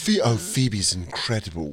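put-on English-accented voice. Imitating a foreign guest from a uk show praising someone: british accent. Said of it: "someone with an accent goes".

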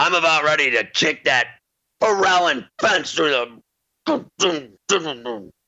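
put-on outburst, kept small. Retelling catching his foot on a fence; retelling his own yell. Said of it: "and then I yelled".

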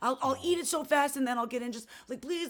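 put-on high, pleading, begging child's voice. Retelling how a child begged a parent for cake: imitating a child's pleading. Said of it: "She's pulling that".

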